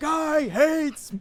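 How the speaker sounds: furious, shrill, loud meltdown outburst. Retelling a girl served spinach: imitating a kid flipping out. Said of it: "she starts flipping out and she's like".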